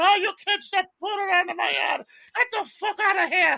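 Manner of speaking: bad, horribly done, put-on Irish brogue, yelled. Recalling neighbors yelling at kids while growing up, in a horrible Irish accent. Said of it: "that horrible Irish accent".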